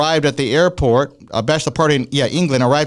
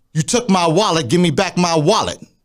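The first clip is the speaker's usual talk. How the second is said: put-on drunk man voice, higher pitch; 3 semitones higher than usual. Retelling what a drunk man at the ATM said: imitating a drunk man. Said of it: "That's what he says to me".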